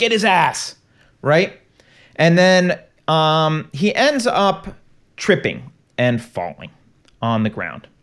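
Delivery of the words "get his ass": light, half-voiced crowd shout, kept small. Retelling how people chased a guy: imitating people yelling. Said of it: "you hear them yell".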